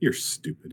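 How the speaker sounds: hushed whisper under the breath. Playing a character who insults someone in a bar: muttered under breath. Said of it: "I say under my breath".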